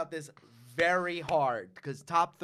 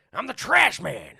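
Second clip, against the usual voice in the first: very loud, rough voice, belted out, pitched up; 7 semitones higher, 9 dB louder than usual. Talking about It's Always Sunny, doing a Danny DeVito impression. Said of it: "This is my impression of Danny DeVito".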